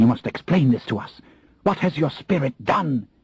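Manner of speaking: hissing, sibilant, high-pitched tone. Reading a queen demanding an explanation: hissing whisper. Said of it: "In a hissing whisper".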